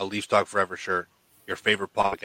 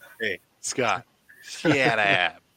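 drawn-out delivery in comedian style. Telling a co-host to shut up: Adam Sandler impression. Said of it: "this is my Adam Sandler impression".

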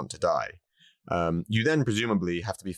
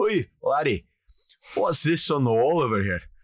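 put-on Glasgow Scottish accent, higher, slower; 7 semitones higher, 4 dB louder than usual. Retelling a man calling over the bartender, in a Glaswegian accent. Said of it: "the Glaswegian goes".

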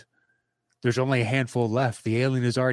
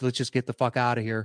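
plain

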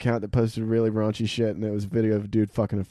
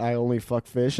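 usual speaking voice

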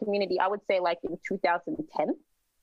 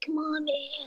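mock strung-out addict voice, higher, slower; 7 semitones higher, 3 dB quieter than usual. Describing what they associate with a crack accent, imitating a crackhead accent. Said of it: "associated like the crack accent to be like".

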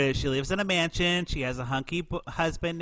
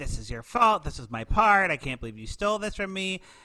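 acted accusing scream, pitch climbing as it builds; 3 semitones higher than usual. Retelling a movie scene where one character blames another: imitating someone screaming. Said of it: "starts screaming at Alicia".

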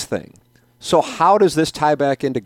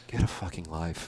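mock weary, worn-down, defeated mutter, very quiet; 9 semitones lower, 13 dB quieter than usual. Imitating what she always says, in her defeated tone. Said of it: "I did the tone right, too. I've heard it so many times".

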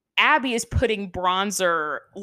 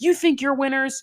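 mock scream, higher; 5 semitones higher than usual. Retelling how a coach screamed at the children: imitating someone screaming. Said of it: "And she's screaming at them".

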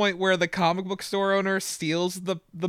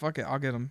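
utterly level, uninflected dead-flat monotone; 7 semitones lower, 9 dB quieter than usual. Retelling a story, quoting Cody's reply in front of the parents; Cody's flat monotone. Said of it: "in like the most monotone voice ever".

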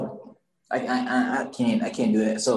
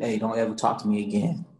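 acted-out whisper, lower and faster; 4 semitones lower, 3 dB quieter than usual. Retelling what they said by a girl's ear as the bell rang: whisper. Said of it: "I went by her ear".

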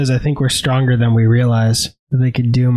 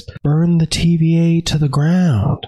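lilting, unhurried delivery; 4 semitones higher than usual. Retelling a funny line from the show in the voice of Owen Wilson: Owen Wilson voice. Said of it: "hearing Owen Wilson say it is hilarious".

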